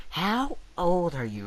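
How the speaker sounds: demanding, entitled-sounding woman voice. Retelling a woman questioning a kid on a bike, in a put-on Karen voice. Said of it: "This is my best Karen voice".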